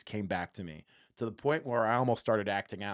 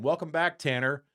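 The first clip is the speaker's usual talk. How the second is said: mock, teasing, high, called-out yell; 5 semitones higher, 4 dB louder than usual. A fan retelling calling out to a player leaving the field, retelling a yell across the field. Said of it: "I yelled that back to him".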